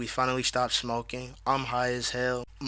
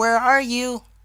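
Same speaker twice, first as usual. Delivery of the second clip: very high-pitched, anxious, worried voice; 11 semitones higher, 7 dB louder than usual. Retelling a phone call, quoting the mother: imitating mom's worried voice. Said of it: "my mom says in a worried voice".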